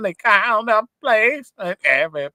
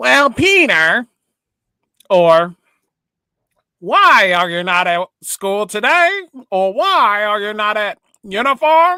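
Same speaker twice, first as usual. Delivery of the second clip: cartoon squid character voice, loud; 2 semitones higher, 5 dB louder than usual. Showing he can do voice acting, the speaker performs a Squidward voice. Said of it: "I'm doing Squidward".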